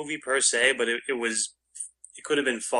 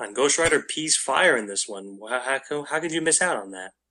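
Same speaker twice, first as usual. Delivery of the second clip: normal talking voice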